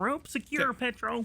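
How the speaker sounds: very high, squeaky put-on creature voice. Voicing a character as he pulls in the rope, in a new character voice. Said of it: "that's a new voice".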